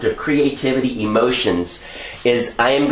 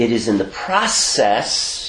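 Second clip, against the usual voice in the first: slow, with the word process stressed. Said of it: "emphasizing process".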